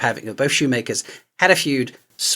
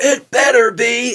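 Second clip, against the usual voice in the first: very high-pitched, loud put-on character voice; 10 semitones higher, 5 dB louder than usual. Retelling a TV advert where Bender answers a news anchor: Bender voice. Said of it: "then Bender comes in and goes".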